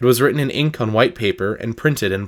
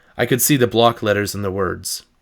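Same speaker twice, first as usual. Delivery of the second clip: plain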